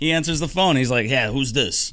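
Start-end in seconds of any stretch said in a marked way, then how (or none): 1.1-1.9 broad, thick, put-on Chicago accent laid on. Retelling a phone call, imitating the man who answered in a thick Chicago accent. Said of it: "he's like thick Chicago accent".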